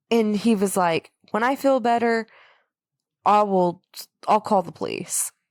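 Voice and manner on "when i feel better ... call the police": plain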